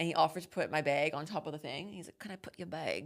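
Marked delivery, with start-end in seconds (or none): 2.2-3.1 polite put-on Scottish accent. Retelling a seatmate on a plane offering to lift a bag: imitating a Scottish accent. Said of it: "That's how he spoke?".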